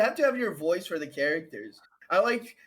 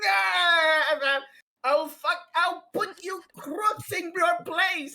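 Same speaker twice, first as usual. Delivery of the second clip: very high, drawn-out, yelled voice; 11 semitones higher, 4 dB louder than usual. Reading a comic character's lines aloud, yelling comic-book lines. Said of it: "I'm like fucking just yelling out".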